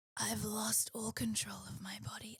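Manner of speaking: mock feeble, weak, sick-sounding voice. Retelling a sick parent's message, imitating a weak, sick voice. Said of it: "literally sounding like this".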